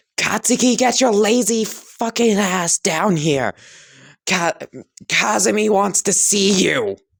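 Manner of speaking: shrill, very high-pitched yelling. Reading a story aloud, the mother calls her son downstairs: yelling. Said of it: "Mitsuki would nod and yell".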